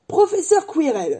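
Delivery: high, called-out exclamation. A man introduces a professor to a boy, exclaiming. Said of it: "s'exclama Hagrid".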